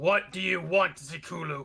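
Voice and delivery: menacing, hostile, threatening tone. During a tabletop game, a player calls out to a stranger in a threatening tone. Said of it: "with that kind of threatening tone".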